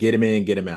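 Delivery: normal talking voice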